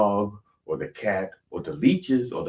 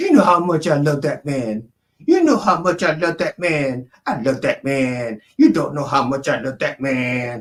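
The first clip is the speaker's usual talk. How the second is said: high, raised woman's voice; 7 semitones higher, 6 dB louder than usual. Retelling what she says to the cat: imitating her voice. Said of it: "but I can do her voice".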